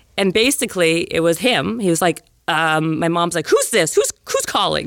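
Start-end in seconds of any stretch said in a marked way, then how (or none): 3.5-4.9 put-on agitation, higher and faster. Speaker retells her mom answering the phone to a caller, imitating an agitated mom. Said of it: "Like so agitated".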